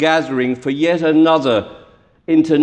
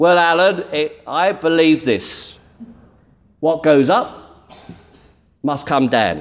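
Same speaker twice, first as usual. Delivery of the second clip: put-on plain, simple, direct London Cockney accent. A preacher retells the sexton's answer about what to preach, Cockney voice imitating Dave. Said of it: "his answer in Cockney voice".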